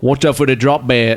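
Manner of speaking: bad put-on Australian accent, sounding British. Two speakers trying out accents, one doing a bad Australian accent. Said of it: "it's just still British".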